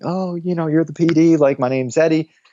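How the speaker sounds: put-on nervous, green young guy's voice. Retelling meeting the pd and introducing himself, imitating a nervous young guy. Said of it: "like the nervous like 22-year-old guy thing".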